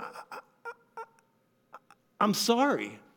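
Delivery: halting stammer, very slow. Retelling an apology made sitting on a bed: imitating own stammering. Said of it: "stammering over the word".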